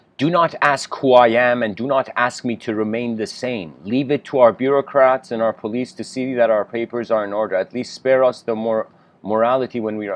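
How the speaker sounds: ordinary talk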